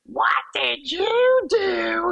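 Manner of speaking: very slow, very high, stern mom voice. Recounting kids wrecking a man's tomato garden and the mom calling out; imitating a mom voice. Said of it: "one of those mom voices".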